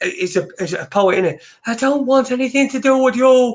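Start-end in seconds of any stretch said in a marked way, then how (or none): 1.7-3.5 rough put-on, high, effeminate Irish accent. Imitating a man who wrote back angrily: attempted effeminate irish voice. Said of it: "quite an effeminate, um, Irish voice".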